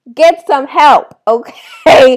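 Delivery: exasperated, loud, high, slow shouting.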